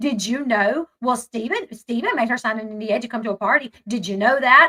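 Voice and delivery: mock patronizing, belittling, condescending talking-down tone. Retelling how she spoke to her late husband's brother: imitating a condescending tone. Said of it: "She has this very condescending tone".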